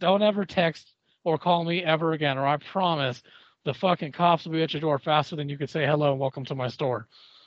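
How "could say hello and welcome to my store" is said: ordinary talk, nothing marked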